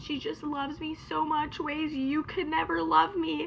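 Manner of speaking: mock blubbering, high-pitched bawling through tears. Retelling what her partner said during their breakup, imitating him bawling. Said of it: "This man is bawling over this".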